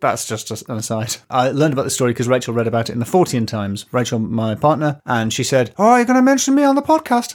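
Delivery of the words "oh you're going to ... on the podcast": very high-pitched, loud voice. Imitating a partner reacting to the podcast mention: imitating Rachel. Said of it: "It's not what she sounds like".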